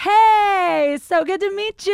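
flamboyant, high, loud, gushing voice.

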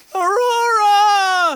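very high, very loud, booming, every vowel stretched out. Copying a TV clip the others just heard: Lorelai Gilmore inflection. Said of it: "we've gotta use this inflection".

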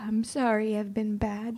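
tearful, sobbing, crying through the words. Apologizing to someone who asks them to stop crying, crying. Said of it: "Stop crying".

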